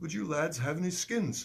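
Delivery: put-on English accent. Retelling a man's question to the speaker and friends, in an english accent. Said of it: "I don't like to do the English accent".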